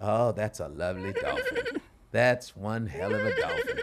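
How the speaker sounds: deep, low, swooping narrator voice. Imitating an actor's line in a dolphin movie: Morgan Freeman impression. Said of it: "He's just like".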